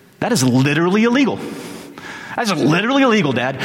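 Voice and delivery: unglued, worked-up outburst with hammering emphasis. Retelling learning his father lost a promotion: retelling his own outburst. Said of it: "and I come unglued".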